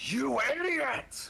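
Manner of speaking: very high-pitched screaming voice. Playing a character who screams after a creature appears: screaming. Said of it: "Armin just screams".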